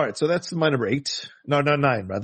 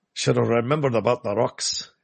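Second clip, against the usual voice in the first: terrible put-on Scottish accent; 2 semitones lower than usual. Acting out a remark during a story: terrible Scottish accent. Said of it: "terrible Scottish accent. Sorry".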